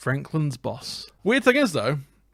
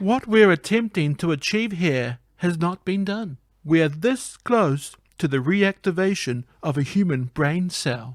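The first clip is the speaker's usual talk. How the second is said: put-on robotic voice with British accent; 3 semitones higher than usual. Voicing a female character at the facility, in a robotic British voice. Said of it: "She sounds like a robot and she's British".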